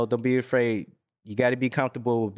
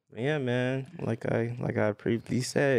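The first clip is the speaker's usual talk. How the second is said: gloomy, depressed, low-spirited voice; 4 dB quieter than usual. Agreeing during a group conversation; sounding depressed. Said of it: "you sound depressed".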